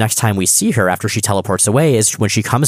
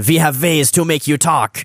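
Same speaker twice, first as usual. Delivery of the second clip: fake Russian accent with the pitch raised; 7 semitones higher than usual. Retelling a story where Kitty tickles Ilyana, in Kitty's fake Russian accent. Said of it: "doing her fake Russian accent".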